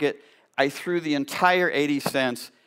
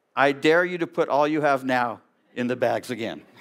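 put-on forceful, strong voice. Speaker retelling a frail elderly woman standing up to a man, retelling a forceful reply. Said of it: "said in the strongest voice she could muster up".

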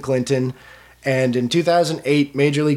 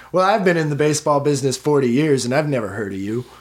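put-on condescending, patronizing reporter tone. Retelling what doubting reporters said when calling to check her story, mock-condescending reporter. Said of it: "who would sometimes condescendingly say things like".

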